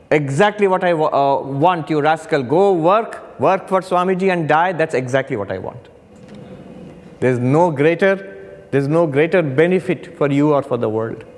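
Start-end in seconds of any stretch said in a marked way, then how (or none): none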